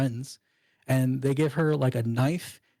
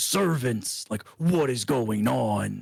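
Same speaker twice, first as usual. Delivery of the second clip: put-on slow, drawn-out spell-casting voice. Retelling a game scene where a child casts thaumaturgy: imitating a big booming voice. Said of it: "they hear this big booming voice".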